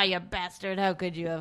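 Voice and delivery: mock-affectionate, joking teasing tone. Recalling a cowboy character calling Pee-wee a name, retelling a joking, loving jab. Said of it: "he like jokingly, lovingly called Pee Wee".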